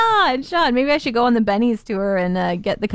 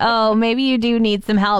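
ordinary delivery

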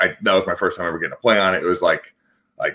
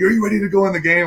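shrill, very high screaming yell; 13 semitones higher than usual. Retelling being screamed at before going in the game: imitating Alfred screaming. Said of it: "Alfred's screaming at me".

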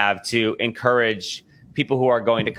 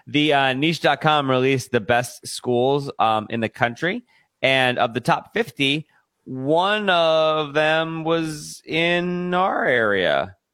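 very slow, deliberate, drawn-out delivery; 4 semitones higher than usual. Reading local news about school rankings; speaking really slowly. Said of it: "I was saying that really slowly".

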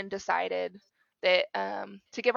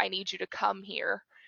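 put-on tearful, pleading voice, much quieter; 4 dB quieter than usual. Retelling calling mom from the doctor's office, say it tearfully as then. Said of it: "just like tearfully said".

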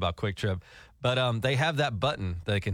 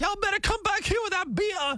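mock very high, loud store clerk yelling. Recounting a store heist, retelling the clerk's yell at one of the thieves. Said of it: "the clerk starts yelling at him like".

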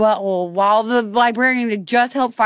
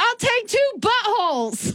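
put-on shrill, very high-pitched child voice hollering; 12 semitones higher, 4 dB quieter than usual. Retelling a child answering while running, imitating a child yelling. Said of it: "So he's yelling while running".

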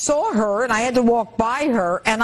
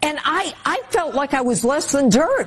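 ordinary delivery

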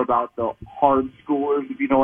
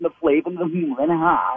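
bookish, nerdy academic voice; 4 semitones higher than usual. Imitating a man who tried to downplay the claims, in a Simpsons professor voice. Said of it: "and he talked like this".

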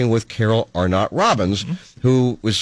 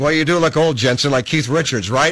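mocking, mock-teasing tone; 3 semitones higher than usual. Retelling how people teased them about looking old, imitating people mocking them. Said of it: "they're all mocking me like".

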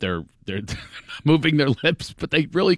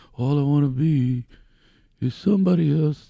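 meek, shy, slow, timid little voice. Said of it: "he was all timid with his regular voice".

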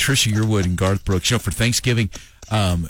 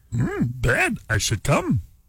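put-on wise old alien voice, higher; 4 semitones higher than usual. Playing with the line about going to bed: Yoda voice. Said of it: "And then if you're Yoda".

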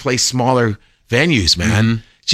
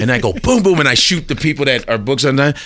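ordinary talk

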